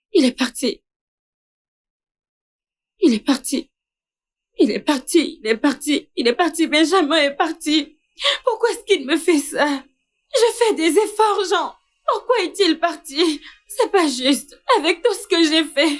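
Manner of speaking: distressed, agitated, worked up. In a drama, a character speaks to jean after benjamin leaves: agitated, distraught.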